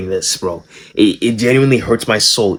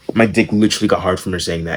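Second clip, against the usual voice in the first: plain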